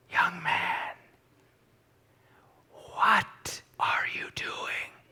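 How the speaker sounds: gentle, refined, breathy, soft, hushed, elegant whisper. Quoting his mime class instructor checking on him, in a soft, elegant voice. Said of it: "she had a very soft, elegant voice".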